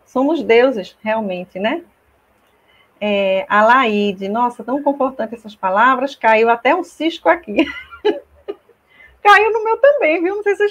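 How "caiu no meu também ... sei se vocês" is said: very high, raised voice catching with tears. Touched by comforting words just spoken, voice choking up. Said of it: "eu até embarguei a voz".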